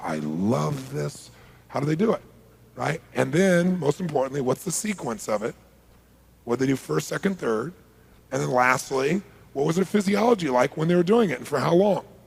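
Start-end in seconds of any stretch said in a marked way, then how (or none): 0.0-1.3 slow, soft delivery with the word love drawn out. Demonstrating how someone might say a phrase; slow. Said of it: "They say it slow".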